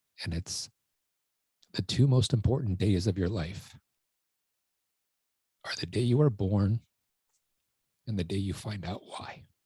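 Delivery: choked-up voice catching with emotion. Sharing an all-time favorite quote that became their life purpose, choked up. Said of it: "I get choked up like this".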